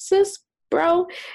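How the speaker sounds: high-pitched, pointed tone. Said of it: "sit on the call and say".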